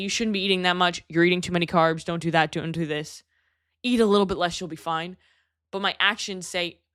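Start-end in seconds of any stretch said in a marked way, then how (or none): none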